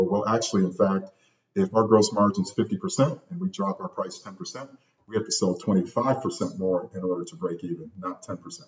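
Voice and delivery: ordinary talk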